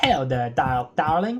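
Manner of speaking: posh, refined, classy put-on voice. Voicing a character whose voice was forgotten: classy put-on voice. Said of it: "It was kind of classy".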